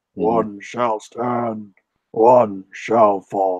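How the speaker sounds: steady, low, rasping robot voice. Trying out an Optimus Prime line on stream, low raspy Optimus Prime voice. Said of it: "a low and raspy voice".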